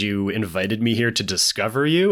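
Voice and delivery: ordinary delivery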